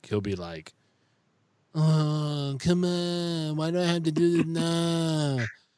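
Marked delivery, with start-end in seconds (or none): 1.7-5.4 put-on very slow, stretched-out, drawn-out childlike tone. Parent describing how their son negotiates, imitating their son. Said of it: "That's an exact impersonation".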